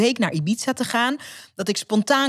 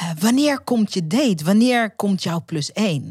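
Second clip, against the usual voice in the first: put-on halting, broken phrasing with a Spanish accent. Retelling what the waiter asked, in broken English with a nice Spanish accent. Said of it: "in gebroken Engels met een mooi Spaans accent".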